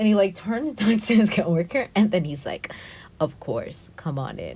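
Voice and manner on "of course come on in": super creepy, soft, drawn-out voice. Recounting a guy letting the group into an elevator, retelling his super creepy voice. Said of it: "in his like super creepy voice".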